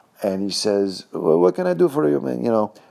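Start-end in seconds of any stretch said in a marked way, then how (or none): 1.1-2.4 put-on old Italian man's broken English, very high. Telling how the man with a broom answered the door, imitating an old Italian man's broken English. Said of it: "with broken English".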